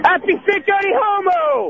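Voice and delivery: high-pitched scream. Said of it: "Scream it".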